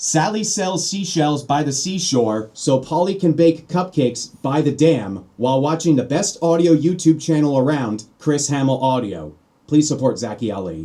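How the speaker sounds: radio-ad voiceover, promo announcer style. Recording a sample voiceover to compare with another vocal; radio promo voice. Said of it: "Sounds like a radio promo".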